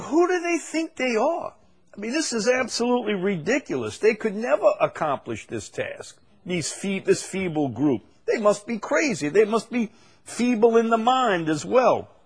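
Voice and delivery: jeering, derisive, scornful taunting voice. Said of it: "here's the mockery".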